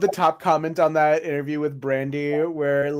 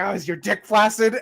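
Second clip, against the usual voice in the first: spooky horror-storyteller tone, casual; 5 semitones higher than usual. Retelling how a wrestler told others a horror story: imitating a wrestler telling a horror story. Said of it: "looking at someone next to him, like".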